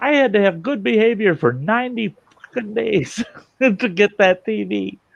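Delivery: play-acted, very high, shrill, enraged screaming fit. Retelling a man yelling at a jailer over his tv, retelling someone screaming. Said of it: "he's screaming at this guy".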